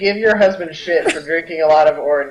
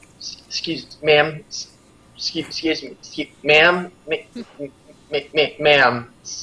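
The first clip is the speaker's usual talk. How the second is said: quietly, awkwardly stammering. Playing a character trying to get a busy barmaid's attention: quietly, awkwardly stammering.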